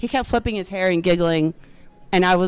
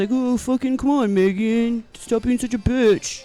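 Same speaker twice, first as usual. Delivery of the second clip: put-on dude voice, spoken faster; 4 semitones higher than usual. Doing one of their dude imitations, addressing megan, dude imitation. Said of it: "When I have my dude imitations".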